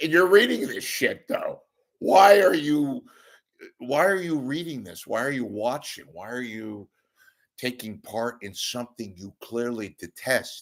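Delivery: mocking, laughing. Retelling own reply to internet trolls, laughing while retelling. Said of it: "I'm laughing like".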